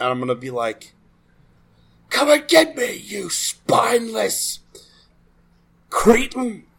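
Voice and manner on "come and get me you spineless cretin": high, taunting, goading shout. Taunting an enemy in character from across the camp: shouting in character. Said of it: "I'm gonna shout to that guy".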